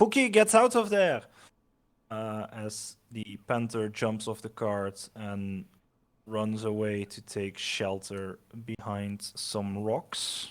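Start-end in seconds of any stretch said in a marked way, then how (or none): 0.0-1.2 very high, shrill, urgent and fast yell. Game master voices a character yelling to his panther to get away; yelled warning. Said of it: "as he yells like".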